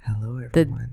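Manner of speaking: soft, dark, sultry, moody, sensual voice. Podcast host opening a darker-feeling episode for listeners, in a moody sensual voice. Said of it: "Like more sensual?".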